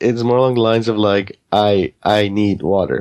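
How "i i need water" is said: very slow, broken caveman voice. Imitating a dim-witted game character's lines: imitating caveman talk. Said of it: "you talk like a caveman".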